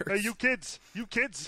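very high, cartoonish character voice. Doing Teddy from Bob's Burgers after a co-host's remark: Teddy voice. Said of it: "you sound a lot more like Teddy from, uh, from Bob's Burgers".

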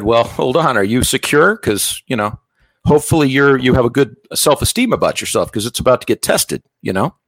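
ordinary delivery

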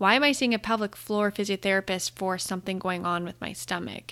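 ordinary talk

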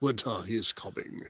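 put-on British accent. Redoing the line after another speaker's attempt, in a Jon Snow British accent. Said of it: "That's better".

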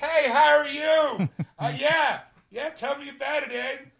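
put-on overly loud voice. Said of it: "I think I'm sounding really loud".

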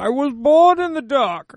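very loud, high, belted-out villain voice. Show listeners how their five-star reviews could be read on the air, in a Bane voice. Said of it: "we could even read in the Bane voice".

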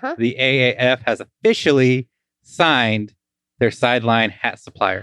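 slow, sarcastic, fake big-news style delivery. Announcing news to a co-host: sarcastic. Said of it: "you're being sarcastic".

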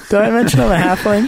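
mock small-creature voice, high.

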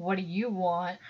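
low, stern, strict schoolteacher voice. Acting out looking over lowered glasses at a staring driver: mock stern teacher voice. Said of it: "Like a stern teacher".

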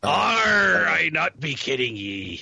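salty pirate voice with drawn-out are. On a show's Talk Like a Pirate Day, joking back in a pirate voice. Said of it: "today is National Talk Like a Pirate Day".

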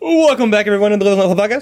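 rapid-fire host delivery. Opening the podcast episode by welcoming everyone, talking really fast. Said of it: "Are we talking really fast today?".

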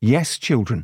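ordinary delivery

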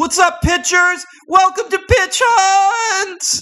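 very high, loud, amped-up, energetic host voice. Redoing the podcast intro after being asked for more energy, more energetic. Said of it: "Try it with like 30% more energy".

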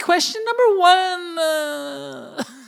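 very high, very slow, creaky, whiny drawn-out vocal fry. Imitating the co-host reading a question: imitating Kat's vocal fry. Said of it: "There's a lot of vocal fry".

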